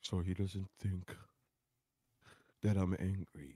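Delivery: deliberately calm, slow, soft, unhurried delivery. Mocking the other speaker's way of talking: imitating his slow calm talk. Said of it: "I guess I'll talk like this".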